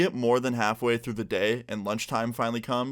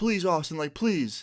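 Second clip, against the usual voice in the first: mock high, tearful pleading on the edge of crying; 6 semitones higher than usual. Retelling a guy begging him to keep something in his locker, imitating tearful begging. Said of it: "he starts crying".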